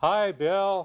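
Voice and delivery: slow, robotic put-on impression voice. Pretending to be Al Gore on the phone, slow robotic Al Gore impression. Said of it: "just talk slow, you know, like a robot".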